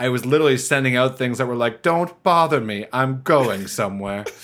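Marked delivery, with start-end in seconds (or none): 1.8-4.3 put-on haughty, stuck-up, snooty voice. Podcast guest quotes the messages she sent out, in a put-on snooty voice. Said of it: "Now there's a snooty voice".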